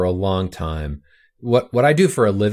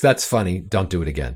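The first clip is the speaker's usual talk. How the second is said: mock laughing, amused, much lower; 3 semitones lower than usual. Retelling the CEO's reaction on the phone to the story, imitating a laughing reply. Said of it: "he laughed and he goes".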